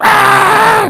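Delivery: high startled scream. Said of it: "it's like".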